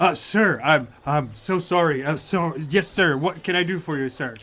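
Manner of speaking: nervous, flustered, stumbling speech. Voicing a colonel who has just seen the player's credentials: flustered apologetic guard voice. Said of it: "he's just drains his face completely".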